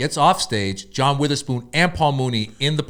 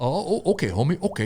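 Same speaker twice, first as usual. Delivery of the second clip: caught off guard, taken aback, dismissive, backing away; 4 semitones higher, 3 dB quieter than usual. Retelling a comedy club meeting, imitating Paul Mooney. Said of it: "He's like".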